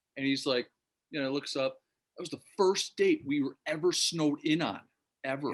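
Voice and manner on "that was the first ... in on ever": put-on Danish accent. Retelling what Lars said about Buffalo: good Lars impersonation. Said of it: "That's a good Lars impersonation".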